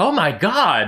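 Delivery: shocked, dumbstruck, high-pitched cry. Voicing Nuhar as he stares at the burning tent: shocked Nuhar voice. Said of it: "his mouth agape".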